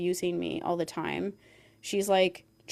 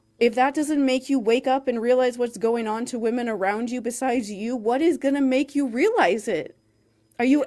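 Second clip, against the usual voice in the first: mock, high, loud, exasperated screaming rant; 5 semitones higher, 6 dB louder than usual. A speaker acts out what they screamed earlier, retelling a scream. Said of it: "I was just screaming like".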